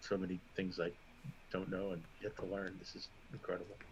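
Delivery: very quiet, muttered under the breath. Speaking in character after receiving armor: under his breath. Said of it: "under his breath".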